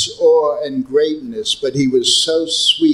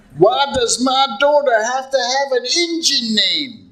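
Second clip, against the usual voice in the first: very high, put-on Texan accent; 10 semitones higher than usual. Act out Govinda Dasi's father questioning Prabhupada about his daughter's name, in a Texas accent. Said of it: "I'm going to do it in the Texas accent".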